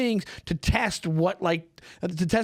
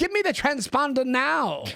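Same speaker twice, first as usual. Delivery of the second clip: put-on old Hollywood mid-Atlantic accent, pitched up; 7 semitones higher than usual. Retelling how he'd deliver a line, mid-Atlantic accent. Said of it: "Mid transatlantic accent".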